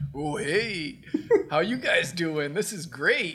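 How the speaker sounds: slow, drawn-out, stretched character drawl. Retelling Hulkster greeting women on the beach: Hulk Hogan impression. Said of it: "Hulkster's just like".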